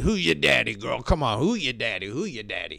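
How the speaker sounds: put-on, low, teasing, taunting voice. Acting out how a line was not said: mock taunting "who your daddy" voice. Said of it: "He didn't say it like that".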